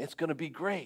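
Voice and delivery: imitated whisper. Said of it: "And I whispered".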